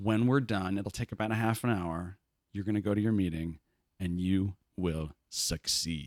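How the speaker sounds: low, deep, sexy voice, slowing at the end.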